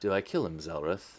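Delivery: very low, very quiet, hushed under-breath mutter. A player's character, trapped between two bugbears, asks a companion, muttering under the breath. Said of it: "Under under my breath".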